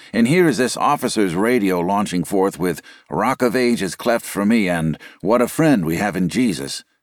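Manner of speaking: ordinary talk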